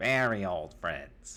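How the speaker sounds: put-on voice of an aged, old goblin. Narrating a scene to the players, voicing the goblin who turns to them: goblin character voice. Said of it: "the goblin uh, like turns to you, and he says".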